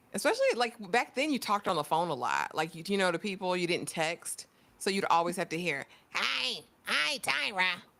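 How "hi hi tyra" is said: high-pitched cartoon voice. Imitating how Steve would greet you on the phone: imitating Steve's cartoonish voice. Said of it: "He always had a cartoonish voice".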